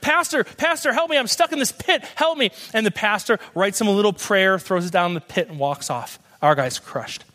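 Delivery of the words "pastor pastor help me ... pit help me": high, mock hollered yell. Telling a story of a man stuck in a pit, imitating someone yelling for help. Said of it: "Our guy starts yelling to the pastor".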